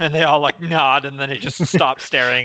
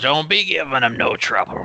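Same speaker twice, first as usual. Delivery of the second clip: put-on wizened, very old gnome voice. A narrator voices an old gnome speaking up from deep in the room, old gnome voice. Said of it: "It's an extremely like old gnome".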